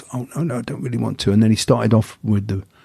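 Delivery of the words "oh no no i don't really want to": put-on timid voice, quieter. Retelling what he said when the others proposed a race: imitating a timid voice. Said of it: "he was really timid".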